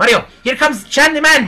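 high-pitched mock Japanese accent. Playing Chad, sent by his master to fight an opponent, use Chad's put-on Japanese accent. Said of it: "I have my Japanese voice".

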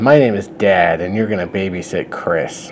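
usual speaking voice

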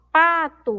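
lengthened, stressed first syllable pa in pato. Teaching the strong syllable in the word pato: stressed, drawn-out syllable pa. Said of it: "Então eu demoro mais um pouquinho falando a sílaba pa".

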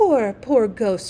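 murmured words, murmuring. A girl kneeling beside an old ghost speaks to him, murmuring. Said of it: "she murmured".

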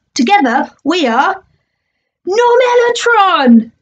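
slow, high, drawn-out, grand heroic announcing voice. He announces a team name for himself and his partner: booming. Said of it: "he boomed".

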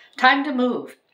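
forced, very high-pitched cheery brightness. A mother, with the captain urging them to go, speaks trying to sound cheery. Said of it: "trying to sound cheery".

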